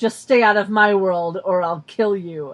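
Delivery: acted, low, loud, completely serious, menacing tone. Recapping a scene, quoting one character's line: retelling in completely serious tone. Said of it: "with a completely serious tone says".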